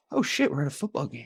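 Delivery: small, calm, puzzled little voice. Joking about how a coach looked on camera: little Lovie Smith voice. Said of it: "a little voice where I'd be like".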